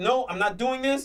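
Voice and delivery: plain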